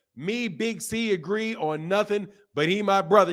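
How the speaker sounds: ordinary talk, nothing marked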